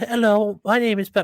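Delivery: very high British little-girl cartoon voice. Retelling how a little niece introduced herself, in Peppa Pig voice. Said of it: "she sounded just like the Peppa Pig girl".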